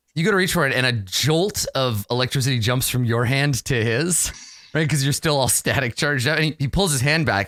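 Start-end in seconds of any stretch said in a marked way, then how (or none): none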